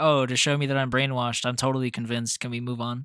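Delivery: loud, condescending, dripping with sarcasm, dismissive. Retelling a character's condescending reply to another character: imitating a sarcastic tone. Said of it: "Being so sarcastic about it".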